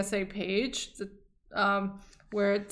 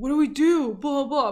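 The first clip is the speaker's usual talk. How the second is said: put-on nasty, heated, raised, mean, pitched-up voices; 5 semitones higher, 5 dB louder than usual. Retelling two TSA agents conferring, imitating their raised, mean voices. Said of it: "They were both raising their voices and being like".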